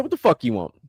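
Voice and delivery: acted-out hostile, rude tone with attitude. Retelling answering the door to a salesman: retelling answering with an attitude. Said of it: "I opened the door with an attitude".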